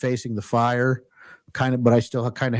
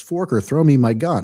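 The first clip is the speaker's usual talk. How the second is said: ordinary talk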